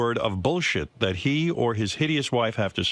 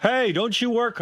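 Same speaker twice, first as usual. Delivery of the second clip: very high, shrill, acted-out yelling voice; 11 semitones higher than usual. Retelling calling out to Robin, who is busy chatting, to be funny; retelling a yell. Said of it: "I yell out to her".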